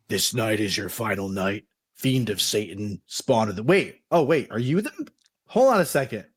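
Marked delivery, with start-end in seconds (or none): 0.1-3.6 low, rough, gravelly voice. The man speaks to the one pretending to sleep, in a low, gravelly voice. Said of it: "begins to speak in a low, gravelly voice".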